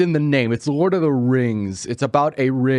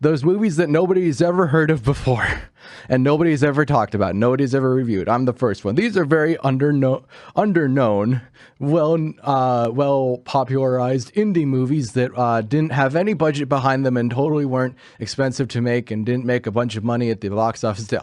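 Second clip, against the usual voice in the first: usual speaking voice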